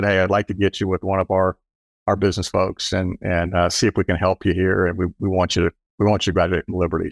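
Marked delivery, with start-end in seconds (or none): none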